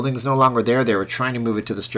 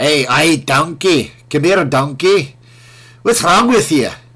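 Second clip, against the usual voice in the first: put-on raised, pitched-up, loud Scottish accent; 5 semitones higher, 8 dB louder than usual. Saying Scottish people sound like Shrek, then quoting him: Shrek Scottish accent. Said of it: "the movie that I'm quoting with the Scottish accent".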